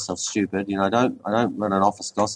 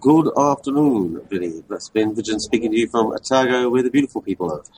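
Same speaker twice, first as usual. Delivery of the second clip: Transylvanian-sounding accent throughout; 2 semitones higher, 4 dB louder than usual. A radio guest greets the host and introduces himself from Otago, Transylvanian accent. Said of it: "It sounds like you're speaking in a Transylvanian accent".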